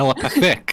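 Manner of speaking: telepathic stressed on second half. Echoing how someone just said the word: stress on pathic in telepathic. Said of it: "you put the emphasis on the second half of telepathic".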